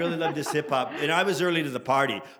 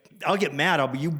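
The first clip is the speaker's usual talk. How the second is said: normal talking voice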